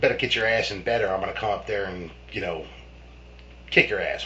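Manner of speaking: usual speaking voice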